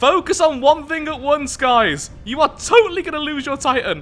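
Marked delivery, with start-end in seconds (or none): 2.2-4.0 voice breaking, cracking mid-line. Warning the others they will lose their Titan: voice cracking. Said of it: "My voice just broke saying that".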